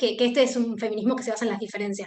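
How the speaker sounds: fast, hurried, rushed delivery. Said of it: "voy a ir muy rápido con esto".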